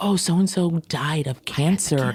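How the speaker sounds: imitated whispering. Retelling how people used to talk about cancer: imitating someone whispering. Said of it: "you whispered it".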